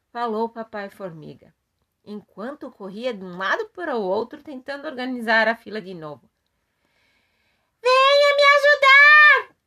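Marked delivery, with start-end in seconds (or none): 7.9-9.5 shrill, very high, very loud shout. Reading a story aloud, a character calls out for help: shouting. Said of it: "gritou a Mamãe Formiga".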